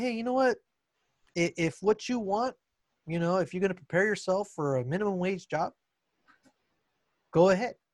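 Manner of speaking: mock, tongue-in-cheek, facetious, sarcastic tone. Retelling what one tells slacking students: retelling own sarcastic remark. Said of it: "in a facetious way, sarcastically".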